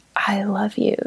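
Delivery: soft, near-whispered, barely above a whisper. Retelling how he said it after he lost his speech: imitating a near whisper. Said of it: "almost in a whisper say".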